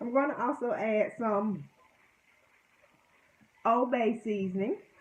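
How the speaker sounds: teary, crying while talking. Cooking and explaining what goes into the water, crying while talking. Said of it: "I'm sorry because I'm just crying".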